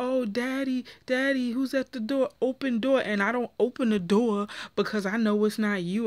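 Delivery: put-on childlike baby talk voice. Retelling a woman's message invoking their son to get a man home: imitating baby talk. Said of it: "now you're going to try baby talk".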